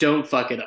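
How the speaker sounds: ordinary talk, nothing marked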